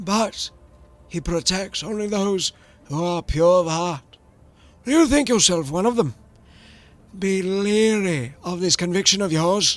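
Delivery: high, cracked priest voice. A priest replies to a visitor who greeted him, in a cracked voice.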